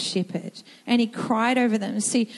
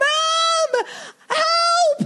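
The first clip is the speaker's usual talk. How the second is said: play-acted crying, very high scream, drawn out; 4 dB louder than usual. Retelling how the son came crying for help: imitating a crying scream. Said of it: "he was crying, screaming".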